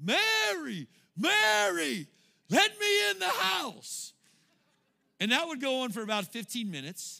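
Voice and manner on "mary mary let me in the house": put-on very high, very slow, rough, loud drunken-sounding screaming. Retelling a drunk neighbor locked out at night: imitating a drunk neighbor screaming. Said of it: "he would start screaming".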